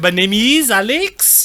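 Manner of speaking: very slow, really bad, clumsy French accent. Retelling a boy answering his French teacher in English, in a really bad Clouseau accent. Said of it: "like really bad".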